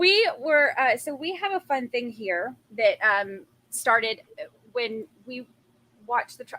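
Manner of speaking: nervous, halting, stammering stutter, tripping over words. Speaker introducing a fun thing started while watching the trial, nervous stuttering. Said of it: "I'm stuttering because I'm like nervous".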